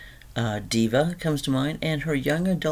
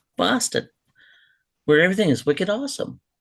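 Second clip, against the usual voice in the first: pitched-up local Boston accent; 6 semitones higher, 4 dB louder than usual. A speaker from boston showing how people there talk, in a boston accent. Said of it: "we do talk like this".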